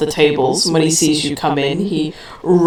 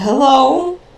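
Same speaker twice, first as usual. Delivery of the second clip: very high, baffled, puzzled tone; 10 semitones higher than usual. Voicing an innkeeper who doesn't recognize a guest: confused greeting. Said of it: "a flick of confusion".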